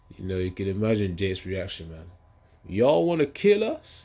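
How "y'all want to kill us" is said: put-on high, griping, complaining American accent. Imagining Jake's complaining reaction under pressure: Jake in an American accent. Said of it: "In American accent".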